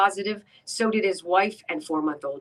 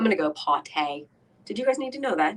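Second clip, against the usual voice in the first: put-on British English accent, higher; 4 semitones higher than usual. Announcing going to the bathroom: put-on English accent. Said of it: "Do we need the English accent?".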